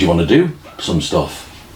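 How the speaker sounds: plain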